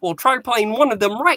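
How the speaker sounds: put-on frog puppet voice. Retelling a Muppet scene where Kermit answers Piggy, Kermit the Frog imitation. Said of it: "[name] is doing a Kermit imitation".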